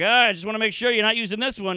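put-on teasing voice. Retelling asking a big guy at the gym about a tiny weight: retelling a joking dig. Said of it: "but also kind of a dig".

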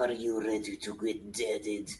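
hushed, slow, drawn-out half-whisper. Speaking in character while cutting into an enemy: half-whispering into his ear. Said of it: "whisper that into his ear".

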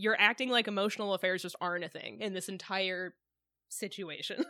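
usual speaking voice

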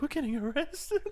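stunned, very high-pitched, shocked blurt of disbelief. Retelling a clip where two guys get caught: imitating someone shocked. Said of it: "so shocked".

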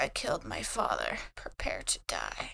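gloomy, depressed, breathy whisper. Voicing a robot character waking up and speaking: depressed. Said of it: "she sits up and she's depressed".

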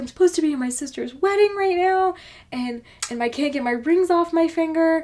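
high, frantic, freaking-out panicked pleading tone. Retelling a lady who ran in with rings stuck on her finger, imitating a frantic woman. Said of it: "she's frantic, freaking the fuck out".

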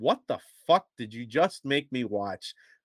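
ordinary delivery

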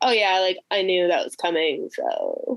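put-on, smug, unsurprised voice. Imitating a co-host who always saw the twist coming: imitating Sean's smug unsurprised voice. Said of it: "You do the voice".

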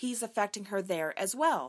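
plain reading voice

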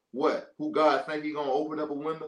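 mocking, scoffing, disbelieving sarcastic tone. Retelling how a man sarcastically answered the man of God, a mock-sarcastic retelling. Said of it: "he sarcastically said".

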